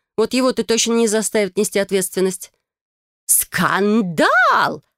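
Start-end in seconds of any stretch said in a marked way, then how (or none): 3.3-4.8 loud cry, word stretched long and swooping. Narrator voicing the mother as she sinks onto a chair, exclaiming. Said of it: "воскликнула женщина".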